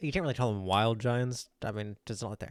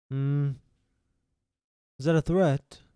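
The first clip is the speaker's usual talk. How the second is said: slow, looming, pondering giant voice; 3 semitones higher, 4 dB louder than usual. Voicing a giant bending down to the players: voicing a giant. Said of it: "he kinda looks over you and he bends down".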